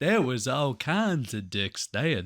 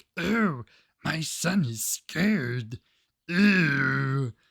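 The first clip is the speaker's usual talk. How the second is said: mock goofy cartoonish voice, very slow; 2 semitones higher than usual. Retelling how the mob boss woman in a movie talked: imitating a Sesame Street-like character voice. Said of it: "what character from Sesame Street is that?".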